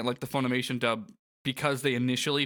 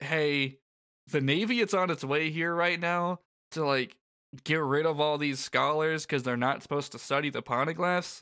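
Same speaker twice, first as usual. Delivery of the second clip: normal talking voice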